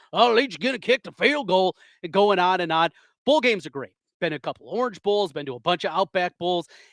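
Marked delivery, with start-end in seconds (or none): 0.1-1.7 put-on high, drawling Texas accent. Imitating a fan sitting behind you at a Texas Tech game, in a Texas drawl. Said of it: "this guy with his Texas drawl".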